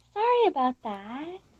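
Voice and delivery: very quiet, polite. Retelling a woman coming back on the phone after screaming at her dog, imitating super quiet, respectful tone. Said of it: "like super quiet and respectful".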